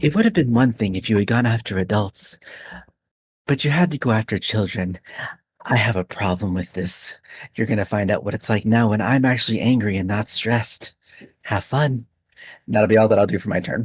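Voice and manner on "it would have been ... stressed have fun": hushed whisper. A player's character hits an enemy and speaks close to his face, whispering. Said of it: "I'll whisper to him".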